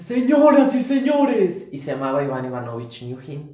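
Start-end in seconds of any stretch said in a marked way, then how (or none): 0.0-1.7 shrill, very high, very loud, projected put-on voice. Recreating a monologue performed at sixteen: Ivan Ivanovich Nyukhin voice. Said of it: "un personaje que hablaba así con esta voz".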